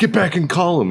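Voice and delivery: put-on high, shrieking scream. Retelling a platoon sergeant's order over the radio: imitating someone screaming. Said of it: "he's screaming over the net".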